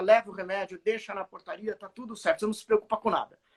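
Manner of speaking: ordinary talk, nothing marked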